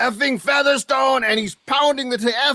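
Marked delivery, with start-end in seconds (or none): 0.0-1.2 put-on loud yelling in a French accent. Retelling how Caron yelled at a hockey player: imitating Caron yelling in a French accent. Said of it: "in a French accent, he's yelling".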